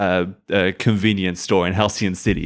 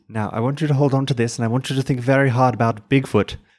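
put-on Irish-accented delivery; 4 semitones higher than usual. Acting out a scene, a character gives instructions in an Irish accent. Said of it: "Give me your Irish".

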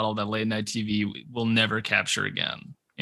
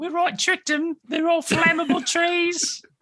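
high, slow, put-on Australian accent. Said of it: "my British woman and my Australian woman".

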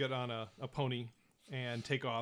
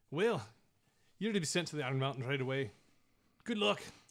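put-on Scottish-accented sergeant voice. Narrator voicing the sergeant in the story, with a scottish accent. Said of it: "I keep wanting to just jump into it because I hear you saying it".

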